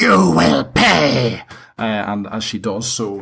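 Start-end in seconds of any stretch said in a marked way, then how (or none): 0.0-1.4 shrill, rough, raging hag's scream, pay drawn out. As the narrator voicing her while she summons lightning, screaming. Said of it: "and she screams".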